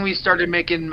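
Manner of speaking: plain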